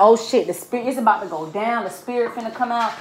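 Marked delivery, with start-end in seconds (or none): none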